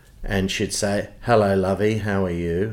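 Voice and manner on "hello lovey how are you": flat, level, unvaried monotone voice. Speaker recalls how a woman used to greet them, imitating Miss Frooms' monotone. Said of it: "spoke in a monotone voice".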